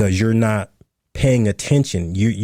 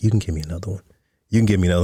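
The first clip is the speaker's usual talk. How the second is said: imitated whisper; 3 semitones lower than usual. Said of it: "she's whispering in my ear".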